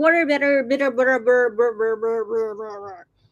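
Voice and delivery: fast, over-the-top, exaggerated American accent. Talking about fluency, repeating one word over and over; American accent. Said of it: "kau cakap kau ada American accent".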